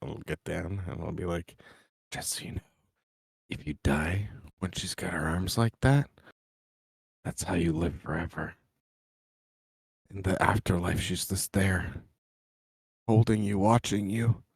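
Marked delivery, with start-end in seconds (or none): 2.1-14.4 confiding, creepy, voiced stage whisper. Half-whispering to the goblins to scare them: half-whispering to goblins. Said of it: "I'll whisper to the goblins".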